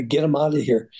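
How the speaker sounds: ordinary delivery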